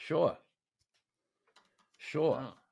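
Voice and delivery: "sure" said in a Boston accent. Asked by a friend to say sure, a speaker answers in a Boston accent. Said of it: "say "sure" in a Boston accent".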